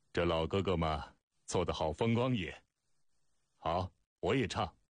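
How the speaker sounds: ordinary delivery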